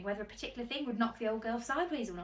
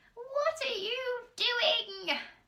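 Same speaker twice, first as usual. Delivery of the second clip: put-on very high, shrill, loud old woman voice calling out; 12 semitones higher, 5 dB louder than usual. Reading a story, a grandmother calls to her grandson from the next room, shrill voice. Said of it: "came the shrill voice".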